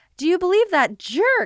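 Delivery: shrill outburst, voice shooting very high. Recapping the moment she slams the door and complains: Dorothy's voice going really high. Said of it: "it just goes really high".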